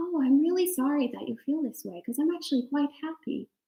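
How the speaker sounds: gentle nice voice. Retelling own reply to a disappointed father, in a gentle voice. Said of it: "I think I had an even better voice, right? Than uh, like gentler".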